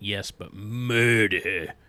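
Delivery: "murder" heavily stressed, drawn out, slow and loud.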